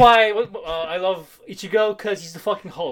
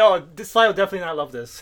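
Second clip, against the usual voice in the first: ordinary delivery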